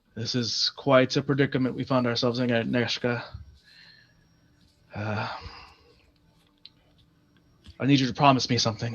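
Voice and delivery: close, private, low hushed half-whisper. Narrating a scene, the speaker voices a man who leans over, half-whispering. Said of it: "he leans over and he he whispers".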